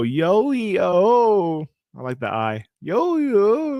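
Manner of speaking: little cracking, breaking voice, very slow, swooping high. Speaker introducing a guest's greeting, imitating a voice crack. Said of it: "your little voice cracked".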